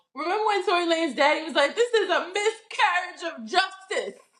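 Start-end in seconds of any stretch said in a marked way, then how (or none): 1.8-4.2 put-on Caribbean accent laid on thick. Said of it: "in his very Caribbean accent".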